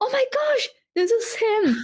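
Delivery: high-pitched, excited, thrilled gasp. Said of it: "I was like".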